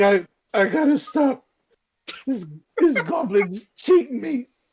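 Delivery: teary, crying a little. Voicing a character who lost all his money at cards: crying a little. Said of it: "And he starts crying a little bit".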